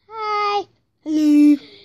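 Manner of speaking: loud, obnoxious, very annoying voice. Greeting the dog Sparky: very annoying voice. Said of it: "Don't do that very annoying voice".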